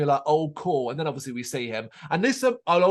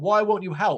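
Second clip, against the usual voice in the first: put-on scream, higher pitch; 4 semitones higher than usual. Retelling a movie scene where a woman screams at a counselor: imitating someone screaming. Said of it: "she's screaming at a counselor".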